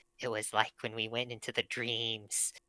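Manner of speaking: very quiet, very low, hushed voice. A character, looking at the other group, speaks of the dreams: lowered voice. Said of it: "he kind of lowers his voice".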